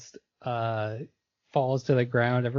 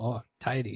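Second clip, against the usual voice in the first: put-on Scottish-ish fairy voice, quieter; 5 dB quieter than usual. Quoting a game character's odd catchphrase: Mister Drippy voice. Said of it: "He always says".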